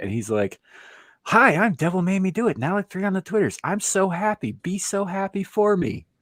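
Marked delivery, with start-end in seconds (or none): 1.2-6.0 mock over-enthusiastic gushing, very high-pitched and loud. Retelling how a co-host announced himself after being told to be enthusiastic: imitating Devil being overly enthusiastic. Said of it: "pimp your shit and be enthusiastic".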